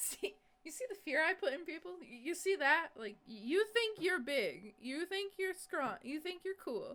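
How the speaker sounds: smug bragging jeer. Describing how Sev acts after letting you in: imitating Sev being smug. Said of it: "smug like".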